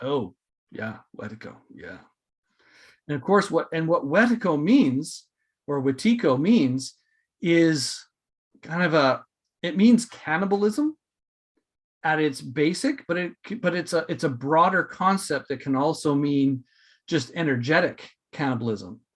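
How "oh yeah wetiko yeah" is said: knowing tone, low and soft. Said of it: "the other person would have gone".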